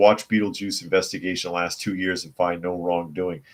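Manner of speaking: ordinary delivery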